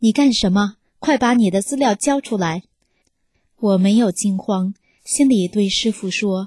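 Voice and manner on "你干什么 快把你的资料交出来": ordinary delivery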